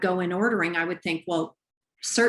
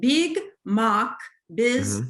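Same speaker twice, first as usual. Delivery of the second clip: put-on Russian accent, slow and swooping; 4 semitones higher than usual. Retelling how he would say Big Mac, in a put-on Russian accent. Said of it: "I have to say this with a Russian accent".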